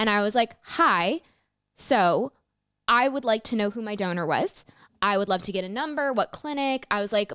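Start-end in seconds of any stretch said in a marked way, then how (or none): none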